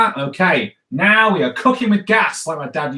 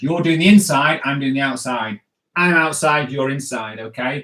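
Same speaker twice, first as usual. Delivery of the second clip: ordinary talk, nothing marked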